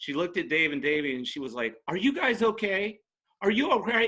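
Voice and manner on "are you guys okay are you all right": very high, shrill yelling, sounding alarmed. Retelling how a younger girl came up at a gig: imitating a girl yelling. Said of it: "started yelling at me".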